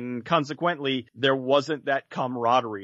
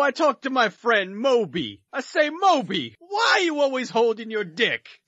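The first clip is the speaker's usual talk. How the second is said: terrible, very high comic voice with wild swoops; 11 semitones higher than usual. Telling a joke in a terrible Andrew Dice Clay impression. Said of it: "my terrible Andrew Dice Clay impression".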